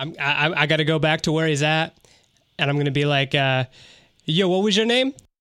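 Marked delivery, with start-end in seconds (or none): 4.2-5.1 put-on New York accent, pitched up. Playing a deception on a guard: new york accent. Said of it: "New Yorkian accent".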